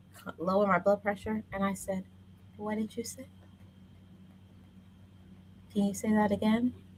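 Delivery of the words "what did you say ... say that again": quiet, low, deadly calm whisper. Retelling how a family quarrel begins: imitating own calm whisper. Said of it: "when I start talking to you with a whisper".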